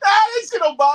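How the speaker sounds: very high, very loud laughing brush-off. Speaker retells lying to his brother about being bothered, laughing it off. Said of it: "I lied and laughed and said".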